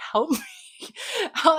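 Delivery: very high voice, giggling and laughing through the words. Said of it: "I don't know why this is making me laugh".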